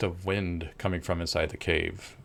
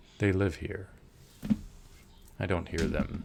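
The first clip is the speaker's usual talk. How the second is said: deep, low voice; 3 dB quieter than usual. A voice in the caves answers the travelers, deep from the darkness. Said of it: "deep voice from deep in the darkness".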